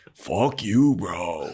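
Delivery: put-on California surfer-dude accent. Retelling a character's reply: imitating a California surfer dude. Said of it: "just California surfer dude".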